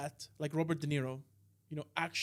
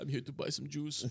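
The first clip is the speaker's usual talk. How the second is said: put-on German accent, lower in pitch; 3 semitones lower than usual. Acting out the bit as Schindler, in a German accent. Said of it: "Why did you give him German accent?".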